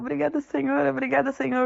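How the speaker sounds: high, tearful, sobbing through the words. Retelling a girl thanking her father over and over, imitating someone crying. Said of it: "Aí ela fica chorando".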